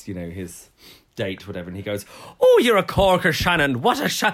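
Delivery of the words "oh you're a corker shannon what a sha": badly done, loud, swooping put-on Irish accent. Retelling a film line from Far and Away: imitating a bad Irish accent. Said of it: "he does it so badly".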